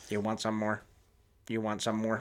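low, flat computer robot voice. Imitating a line from a film: computer robot voice. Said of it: "That's computer robot voice".

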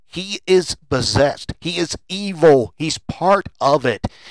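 ordinary talk

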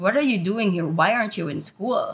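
normal talking voice

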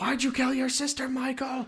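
put-on, very high-pitched screaming. Mocking the therapist who screams at Michael, imitating screaming at Michael. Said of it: "you're just screaming at him".

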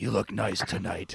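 low, voiced stage whisper. Retelling Batman suddenly appearing beside someone, half-whispering as Batman. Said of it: "He like whispered that".

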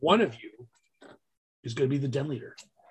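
very gentle, soft voice. Speaker retells a man addressing a group of parents, imitating Matt Lackner very gently. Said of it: "very gently says to all of us".

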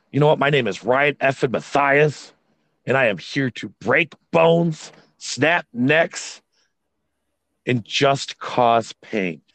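slow, forceful, full of conviction and attitude. Showing how a wrestler should cut a promo: with conviction and attitude. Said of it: "Have some conviction when you say it".

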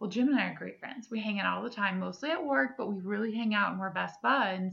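usual speaking voice

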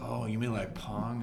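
ordinary delivery

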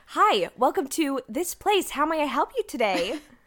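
put-on customer-service voice. Hosts of an audio show joking about customer service voices: put-on customer-service voice. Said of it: "That is my customer service voice".

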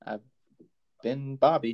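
question-like rising tune on "Bobby". Signing off the show, the second host says his name with rising, question-like intonation. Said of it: "Don't know why I said it like a question mark".

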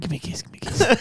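high, soft, fast whisper. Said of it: "He kept whispering".

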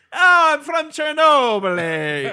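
British accent, put on and exaggerated.

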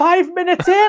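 play-acted, teary-eyed, astonished disbelief, very high pitch. Recalling turning to mom in the theater during the film; retelling a teary-eyed remark. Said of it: "just teary-eyed going".

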